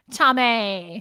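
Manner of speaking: put-on Valley Girl speaking style. Retelling a past reply, switching into a put-on valley girl voice. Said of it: "I changed that like Valley Girl voice".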